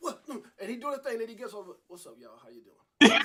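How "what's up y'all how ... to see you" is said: cool, easy, very low, loud, booming voice. Imitating a performer back offstage greeting people: imitating a chill greeting. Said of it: "He's so chill".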